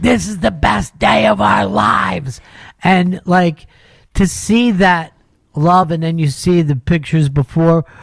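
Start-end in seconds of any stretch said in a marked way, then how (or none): 0.0-2.4 put-on tearful crying yell, higher pitch. Retelling how the brothers cheered her, imitating crying, yelling brothers. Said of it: "with her brothers crying and yelling at her".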